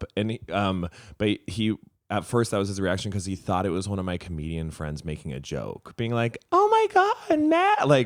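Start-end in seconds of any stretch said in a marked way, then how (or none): 6.5-7.9 very high, very loud, slow, drawn-out fan gushing. Retelling how a comedian friend might joke: imitating fake fanboying. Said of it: "pretending to be fanboying".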